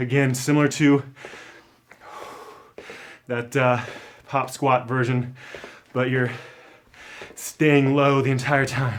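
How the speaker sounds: breathless, out of breath. Guiding an exercise while doing it along, out of breath. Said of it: "I'm a bit out of breath here".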